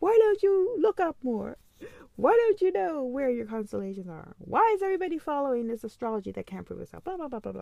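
very loud, exasperated, swooping freak-out rant. The speaker acts out freaking out at everybody in a mock freak-out rant. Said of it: "I just had to do that because I learned how to change my voice".

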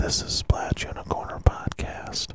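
low ASMR-style whisper. Podcast host showing how ASMR creators talk, in a low ASMR whisper. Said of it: "Are they like this?".

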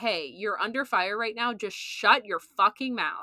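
ordinary talk, nothing marked

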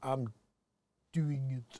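soft, quiet put-on French accent. Quoting this guy over here, speak in a put-on French accent. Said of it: "with his French accent".

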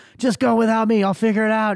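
high, frantic, panicked, worked-up outburst. Retelling phoning his wife from the car after running out of the airport, retelling a frantic outburst. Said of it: "whoa, calm down".

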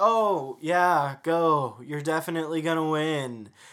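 acted-out mocking tone. Retelling the story of Micaiah's answer to Ahab, retelling a mocking reply. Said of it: "Micaiah mockingly says".

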